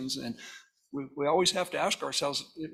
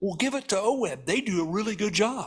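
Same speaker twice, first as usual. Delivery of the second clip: snide, sarcastic delivery; 4 semitones higher than usual. Imitating the legislature handing work to the agency: sarcastic imitation of legislators. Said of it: "I'm gonna be sarcastic here".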